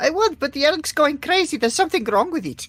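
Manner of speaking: high shout, calling out across a distance. Answering a guard about a noisy elk: shouting out. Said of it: "I'm just gonna sort of shout out".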